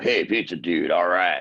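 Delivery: particular manner of speaking, dropped low. Retelling pizza deliveries to a customer's house: imitating the customer's way of talking. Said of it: "'Cause he talked like that".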